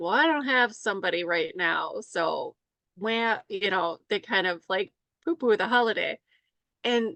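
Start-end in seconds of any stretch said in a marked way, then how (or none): none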